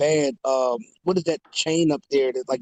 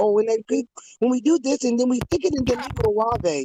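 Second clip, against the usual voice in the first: high-pitched put-on European accent, female voice; 8 semitones higher than usual. Describing a cooking video, imitate the lady in a put-on european accent. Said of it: "she's European, and she has this accent".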